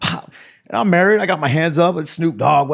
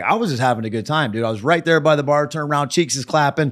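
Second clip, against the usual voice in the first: normal talking voice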